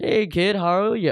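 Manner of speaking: creepy, unsettling tone. Retelling how a coworker greeted a kid: imitating Baby Huey, creepy. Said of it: "this dude's fucking creepy ass vibes".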